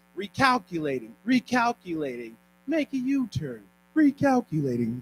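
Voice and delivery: put-on GPS navigation voice. Explaining how mentors respond when mentees miss a turn: GPS voice. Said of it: "That's my G P S voice".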